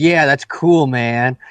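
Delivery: cool, slow, laid-back hippie jive drawl. Describing a woman who talks like she's at a jazz club, imitating hip jive talk. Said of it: "that's what she looks like and is talking like".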